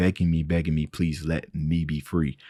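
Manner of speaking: ordinary talk, nothing marked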